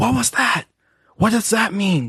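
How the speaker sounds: put-on child's whisper. Imagining a loud kid in the theater asking questions: imitating a kid whispering. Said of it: "I really don't want him to be whispering".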